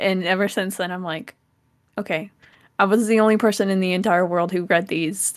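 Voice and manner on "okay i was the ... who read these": ordinary talk, nothing marked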